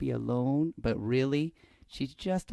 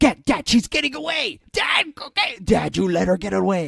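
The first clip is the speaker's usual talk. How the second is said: put-on creepy, eager child voice, higher and louder; 8 semitones higher, 11 dB louder than usual. Retelling a daughter urging her dad at Walmart, imitating her creepy eagerness. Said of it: "she's acting like a, like a serial killer".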